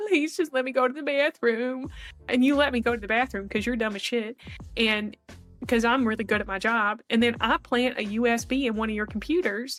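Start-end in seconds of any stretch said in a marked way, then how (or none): 0.0-1.9 fake sobbing, crocodile-tears begging tone. Acting out crying in front of the listener to be let out, mock sobbing plea. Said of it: "And I'm sobbing".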